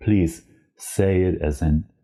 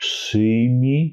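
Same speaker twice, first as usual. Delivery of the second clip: a bit slower pace; 4 semitones higher than usual. Teaching a Polish phrase, repeating the word a little slower. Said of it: "One more time, a little bit slower".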